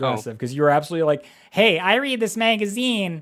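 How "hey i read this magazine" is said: put-on slow, high, drawn-out little-kid voice. Retelling how the other speaker offered a magazine: imitating someone as a little kid. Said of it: "That's what you sounded like when you were a little kid".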